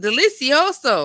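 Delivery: high, loud cartoonish voice. During a stream giveaway, the speaker says a single word: Dora voice. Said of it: "in my Dora voice".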